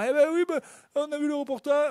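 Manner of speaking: fake Southern French accent. Describing a grandmother excited by a tv cup report, imitating grandmother with southern accent. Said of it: "j'imite ma grand-mère avec l'accent du Sud".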